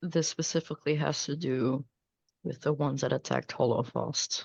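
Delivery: fast, hushed, quick half-whisper. Secretly telling Zola about the ones who attacked Hollowfast: half-whispering in character. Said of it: "I'm going to whisper to Zola".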